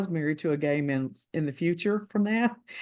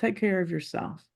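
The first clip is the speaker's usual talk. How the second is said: put-on, very cold voice; 2 semitones higher than usual. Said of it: "he said to me in a very cold voice".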